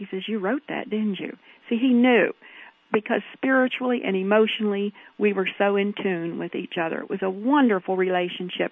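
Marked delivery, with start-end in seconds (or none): 0.3-1.4 hushed, quiet whisper. Recalling a garden wedding, the speaker quotes the spouse's reply to a poem, retelling a whisper. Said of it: "he turned and he whispered".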